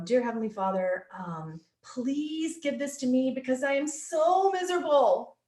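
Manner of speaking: mock snide, sarcastic, pious-sounding tone, pitched high. Acting out how a woman prays, mocking her way of praying. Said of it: "here's the other way she says you guys pray".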